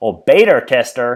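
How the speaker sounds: put-on American accent. Presenting a guest's program, repeating a word in an American accent. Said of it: "if I pull out my American accent".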